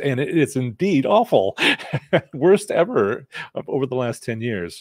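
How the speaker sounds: voice cracking and breaking on the words. The speaker answers a listener's question, voice cracking. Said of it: "my voice is cracking".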